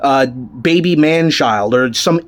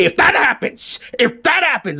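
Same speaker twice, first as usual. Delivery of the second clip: put-on overblown wrestling-promo fury, high and swooping; 8 semitones higher than usual. Imitating a wrestling reviewer getting mad about what hasn't happened: imitating j d angrily screaming. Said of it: "red in the face and he's screaming".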